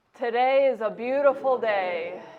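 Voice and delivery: loud, full, projected performance voice on the exhale. Demonstrating a voice exercise sentence after a big breath in, good and loud. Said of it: "That was good and loud".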